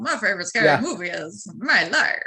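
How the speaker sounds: slow, drawn-out, cigar-in-teeth wisecracker voice. Suggesting a line be said like a comedian with a cigar: Groucho Marx voice. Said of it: "a Groucho Marx and a cigar".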